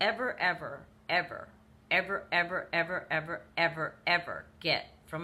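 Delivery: each word drawn out, very slow and deliberate. Warning listeners about trying to get through to a narcissist, said very slowly. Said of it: "I'm going to say this very slowly".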